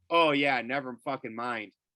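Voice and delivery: normal talking voice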